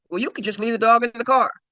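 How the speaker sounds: mock snippy tone. Retelling a phone call with a woman: imitating someone with attitude. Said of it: "she said it with such attitude".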